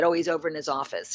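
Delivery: put-on smug, superior, arrogant, lofty tone. Retelling how a bodybuilder answered a question: imitating an arrogant reply. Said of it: "the bodybuilder very arrogantly said".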